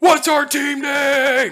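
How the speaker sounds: very loud, very high, furious top-of-lungs scream. Retelling a battle moment, imitating Geldrick raging at the top of his lungs. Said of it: "he's raging at the top of his, of his lungs and goes".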